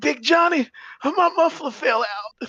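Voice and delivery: very high, loud squeaked exclamation. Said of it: "And he's like".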